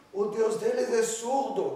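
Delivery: heavy put-on Swiss accent, loud and slow. Quoting a Swiss woman who had a Methodist church at her house, imitating a strong Swiss accent. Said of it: "ela era suíça, tinha um sotaque muito forte, ela falava assim".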